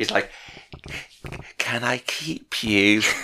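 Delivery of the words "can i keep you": put-on, acted-out whisper. Retelling a scene, the speaker acts out the ghost's question, retelling a whisper. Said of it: "He whispers it".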